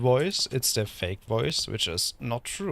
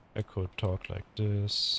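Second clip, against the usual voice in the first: low energy voice, quieter; 3 semitones lower, 5 dB quieter than usual. Actor demonstrating another way to voice a character, in a low energy voice. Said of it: "Be like low energy".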